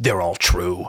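very low, really deep voice. Retelling a tv character stepping up to a nervous girl, in a real deep voice. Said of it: "like a real deep voice".

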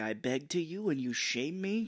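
acted, furious old lady voice, slow and rising. Retelling a movie scene where the old lady was pissed: imitating Mrs. Ganush angry. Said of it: "she was pissed".

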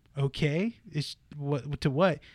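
ordinary talk, nothing marked

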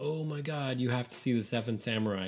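ordinary delivery

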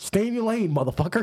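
high-pitched, hard, angry outburst.

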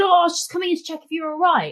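mock very high-pitched embarrassed shouting. Retelling what a man getting into the speaker's bed shouted, retelling an embarrassed shout. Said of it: "he started shouting because he was embarrassed".

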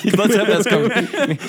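high, laughing mock fretting.

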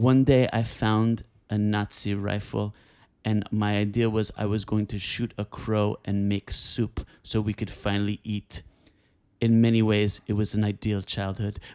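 put-on German-accented voice. Retelling a story in an impression of Werner Herzog. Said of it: "I wish I could do a good Werner Herzog".

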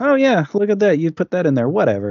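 loud, sing-song nonchalance. Retelling how a character reacts to a rat in his soup: imitating an unconcerned tone. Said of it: "completely unconcerned by it".

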